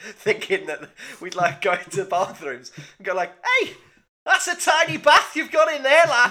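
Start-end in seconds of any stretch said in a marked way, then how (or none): 3.6-6.3 very high, loud, baffled Scouse lad voice. Redoing an old bit about small things around the house: imitating a confused Scouse lad. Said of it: "we'd have a confused Scouse lad".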